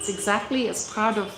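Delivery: ordinary talk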